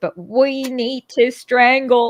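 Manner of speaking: very slow, attempted British accent, not quite right. Quoting Winston Churchill while telling history, failed Winston Churchill impression. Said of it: "I'm not getting British accent now".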